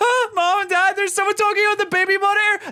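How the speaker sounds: mock crying, upset, high, tearful little-kid voice. Retelling running to parents after a voice on the baby monitor, imitating crying as a child. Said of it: "I went crying downstairs and said".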